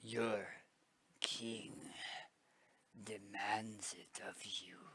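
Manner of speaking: deep, gravelly voice with halting, broken-up phrasing. As the king, demanding the goblin's work from them, in a deep gravelly voice. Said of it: "it's a deep and gravelly voice".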